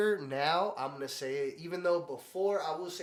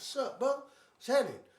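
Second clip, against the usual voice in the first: riled-up, pitched-up, confrontational angry tone; 9 semitones higher than usual. Retelling meeting a drunk stranger who jumped out of his car: retelling getting mad. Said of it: "And I got all mad".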